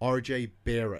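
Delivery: said with an American accent. Saying a name from Basketball Reference: American accent on RJ Barrett. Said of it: "if you say that with an American accent".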